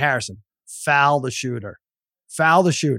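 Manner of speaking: ordinary talk, nothing marked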